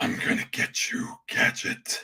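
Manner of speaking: hushed, breathy cartoon villain voice, whispered. Off camera so as not to embarrass yourself, try out a Doctor Claw voice. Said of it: "Little Doctor Claw for you".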